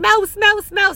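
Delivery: put-on very high-pitched shrieking yell. Retelling how they yelled on spotting a mouse at an Airbnb: retelling own yell. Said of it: "So then I'm yelling".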